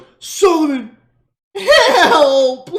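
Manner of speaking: very high, very loud fake sobbing. Acting out how the other player's character called to solomon, mock crying. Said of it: "Like you start crying, you're like".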